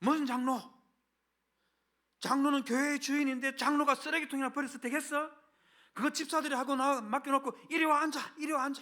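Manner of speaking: furious, loud, high yelling. Telling the congregation how the head elder angrily called another elder over: retelling an angry shout. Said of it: "언성을 높여고 화가 난 목소리로".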